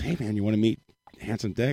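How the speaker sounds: all sugary, sweet and friendly tone. Retelling a friend's offer at a bar: imitating Dean talking sweetly. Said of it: "he says to me all sweet".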